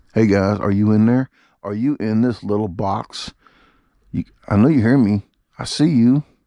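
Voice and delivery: eerie, put-on sinister tone. Talking into the camera as if someone is inside it: put-on creepy voice. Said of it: "That's creepy, ain't it?".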